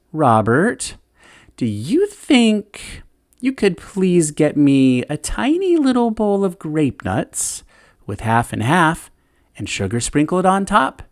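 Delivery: acted sweet syrupy honeyed voice, high sing-song. Speaker retells a woman in the bathtub calling Dad in, imitating a sweet, syrupy voice. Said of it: "in a sweet, syrupy voice".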